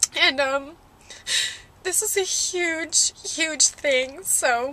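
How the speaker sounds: slow, tearful speech through crying. Speaker telling you guys about a rescue mission, crying while speaking. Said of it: "I'm sorry I'm crying".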